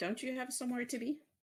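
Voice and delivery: high, fast snide jab.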